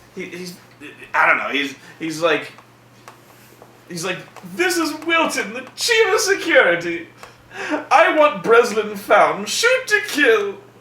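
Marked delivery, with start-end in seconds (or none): 4.5-10.5 very high announcer voice over a loudspeaker. Imitating the warden announcing over a microphone: imitating the warden on a microphone. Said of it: "he's on a microphone going".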